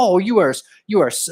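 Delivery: talking through fake laugh. Imitating an online arguer's fake laugh: imitating a fake laugh while talking. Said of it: "they're doing a fake laugh".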